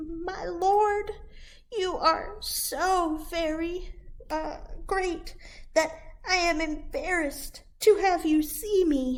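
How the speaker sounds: very small, high-pitched voice. Reading a story aloud, the Shmoony answering the Lord of the Forest in Shmoony's very small voice. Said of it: "answered in a very small voice".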